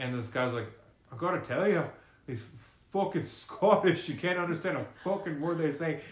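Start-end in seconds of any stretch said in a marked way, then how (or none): 1.1-6.0 terrible put-on Irish accent, pitched up. Retelling what a man at a Dublin concert said, in a terrible Irish accent. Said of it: "that was a terrible Irish accent".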